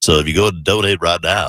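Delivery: hammy, cheesy, corny radio DJ selling voice. Asking radio listeners to donate, the speaker uses a DJ Pukey voice. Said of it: "this is my best D J Pukey voice".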